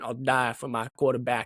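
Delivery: put-on thick, laid-on country accent. Imitating a player's mentality about his quarterback: thick country accent imitating Will Campbell. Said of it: "and that thick country accent".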